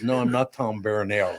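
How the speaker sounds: put-on French accent. Joking about a name said the French way: Inspector Clouseau French accent. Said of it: "You sound like, uh, the Pink Panther".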